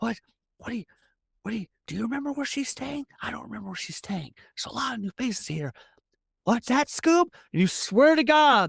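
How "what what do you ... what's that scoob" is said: secretive, hushed half-whisper. Voicing a character who half-whispers a question to his dog: half-whispering. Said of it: "you hear him whispering".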